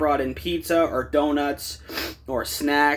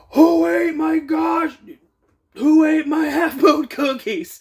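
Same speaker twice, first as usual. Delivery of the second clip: very high, shrill, loud screaming yell; 11 semitones higher, 5 dB louder than usual. Retelling how a man came in the back door, imitating his screaming. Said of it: "he's ye- screaming".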